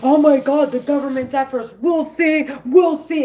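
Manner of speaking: hot-headed, furious angry ranting outburst. Retelling how someone blows his lid: imitating someone blowing his lid. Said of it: "he wants to blow his lid".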